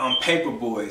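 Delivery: normal talking voice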